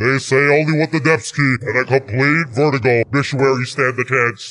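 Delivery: low, spooky, villainous scary voice. Reading a game character's lines aloud, done in a scary voice. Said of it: "Let me read his voice all scary".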